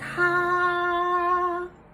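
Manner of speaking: flat, unchanging, level pitch on ta. Teaching how a pronoun sounds: even level tone on ta. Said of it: "It's just an even tone of the A".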